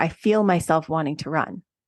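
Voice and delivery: plain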